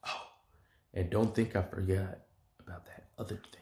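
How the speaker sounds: soft, hushed, under-the-breath whisper. Retelling a scene with Bakugo, acting out another character's line: retelling a whisper. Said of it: "and then he whispers".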